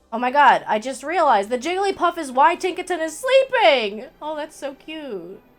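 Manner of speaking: loud, excited yelling. Reacting to a sudden realization: excited yelling. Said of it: "I'm yelling about it".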